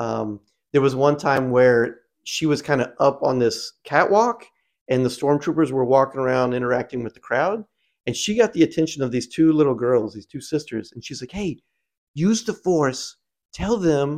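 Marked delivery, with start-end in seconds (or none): 11.3-14.2 put-on slow, lilting, pitched-up British accent. Retelling what she told two little sisters from a catwalk, Rey accent. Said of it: "in her like Rey accent".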